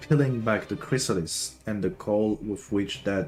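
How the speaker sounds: ordinary delivery, nothing marked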